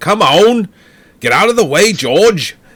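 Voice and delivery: put-on loud yell, heavy British accent. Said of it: "he's yelling at the other driver".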